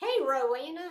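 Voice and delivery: accent of the American South. Greeting someone by name after seeing it: talking southern. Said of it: "I all of a sudden started talking Southern".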